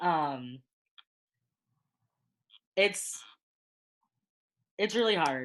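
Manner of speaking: choked-up, halting, emotional voice breaking. Speaker describes a terrible interaction and more looks in the streets, getting emotional. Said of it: "I'm getting emotional".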